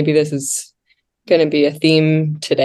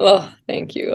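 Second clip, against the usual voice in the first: fighting back tears, teary voice; 4 semitones higher than usual. Thanking the host after a warm compliment, holding back tears. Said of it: "I'm holding back tears".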